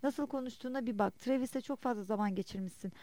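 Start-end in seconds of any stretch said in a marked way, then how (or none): none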